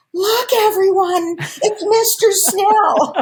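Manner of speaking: big, loud, booming voice, very high pitch. Retelling announcing a guest to packed backstage family and friends, in a big loud voice. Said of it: "in my big loud voice".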